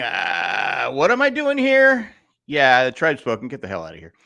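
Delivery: slow drawl with wide swooping pitch. Retelling what Jeff was thinking at a vote: imitating Jeff. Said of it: "'Cause Jeff was, like, going".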